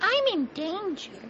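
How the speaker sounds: very high, squeaky put-on character voice. During a game, quoting a line stuck in their head: Ralphie impression. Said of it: "that was a perfect Ralphie impression".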